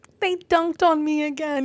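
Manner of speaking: put-on high, tearful, crying little kid voice. Imagining a future son coming home upset, imitating a crying child. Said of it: "when he comes home crying, he's like".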